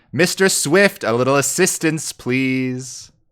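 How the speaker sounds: loud, high yell carrying across. Voicing a character calling another to join the fight: Verdon yelling out. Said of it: "You do hear Verdon yell out".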